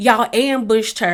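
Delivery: ordinary delivery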